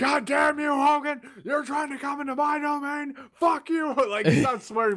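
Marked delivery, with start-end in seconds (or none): 0.0-3.9 high, livid screaming, full of rage. Acting out Jesse Ventura flipping out at Hogan, imitating Jesse Ventura screaming. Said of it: "And just starts screaming at Hogan".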